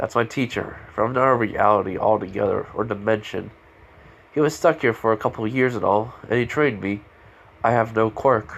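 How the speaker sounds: normal talking voice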